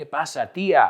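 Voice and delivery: ordinary talk, nothing marked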